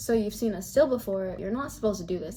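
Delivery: normal talking voice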